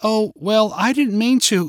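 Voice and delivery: halting, stumbling stammer. Narrating Katie's reply to a parent's remark on Halloween: stammering. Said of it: "Katie stammered".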